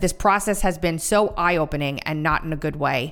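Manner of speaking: ordinary talk, nothing marked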